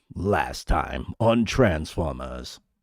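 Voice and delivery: slow, dramatic put-on narrator announcer voice. Recalling transformers, speaker does a line in a dramatic narrator voice. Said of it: "I could do his voice".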